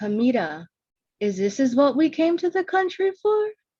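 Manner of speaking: high, loud, put-on Caribbean accent. Imagining her mother questioning her, imitating mom's caribbean accent. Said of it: "mom with a Caribbean accent asking me".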